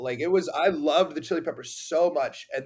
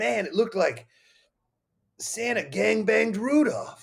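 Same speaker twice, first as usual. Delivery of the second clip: put-on very raspy, pitched-up old Jersey guy voice; 6 semitones higher than usual. Quoting how an author talks, do a very raspy old jersey guy impression. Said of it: "that's a pretty good impression. He's very raspy".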